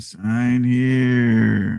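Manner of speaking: scary, menacing voice. Voicing the scary red contract box: scary voice. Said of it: "a scary vo-, voice saying".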